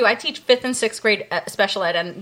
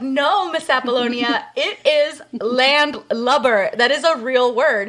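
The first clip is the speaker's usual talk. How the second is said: normal talking voice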